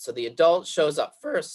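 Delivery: voice cracking and breaking partway through. In the middle of an explanation, voice cracking. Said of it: "excuse me as my voice cracks".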